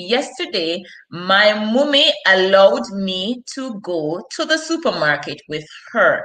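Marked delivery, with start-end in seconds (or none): none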